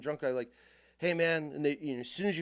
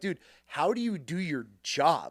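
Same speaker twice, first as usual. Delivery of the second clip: heated, fed-up shouted yell; 4 dB louder than usual. Recounting a hit-and-run dispute, the speaker replays yelling at the man, retelling own yelling. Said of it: "and then I start yelling at him".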